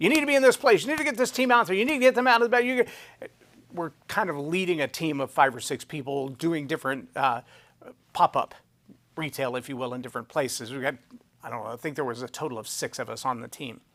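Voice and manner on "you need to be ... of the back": mock very high, frantic, shrill, raised yelling. Retelling a phone call from an activist: imitating someone yelling. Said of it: "he's yelling at me".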